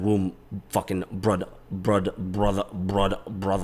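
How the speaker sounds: bad fake Korean accent, stumbling over "brother". Talking about his close friend, attempting a bad Korean accent. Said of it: "I was trying to do it in a bad Korean accent".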